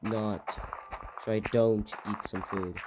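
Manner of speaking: normal talking voice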